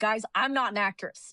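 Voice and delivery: ordinary talk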